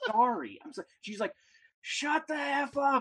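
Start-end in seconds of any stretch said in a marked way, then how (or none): 1.8-3.0 mock kid's shout, high, very slow, stretched-out. Telling how a kid accidentally unmuted, the speaker is imitating the kid yelling. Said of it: "She's like yelling at the".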